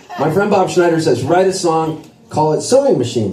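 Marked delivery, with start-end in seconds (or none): none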